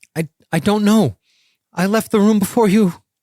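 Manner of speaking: breathless, high, panting, stammering speech. Threatened with death and questioned, the coin man answers, panting, out of breath. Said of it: "He's panting, out of breath".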